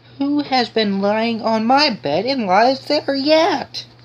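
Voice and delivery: put-on tiny, very high, slow, astonished teeny tiny voice. Narrator reading Goldilocks, voicing the teeny tiny bear crying out; teeny tiny voice of astonishment. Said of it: "cried out in a teeny tiny voice".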